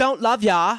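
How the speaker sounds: put-on high-pitched heavy London accent. Retelling a film scene where a character rejects a suitor: imitating a heavy London accent. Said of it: "she's got, like, a heavy London accent".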